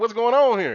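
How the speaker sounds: plain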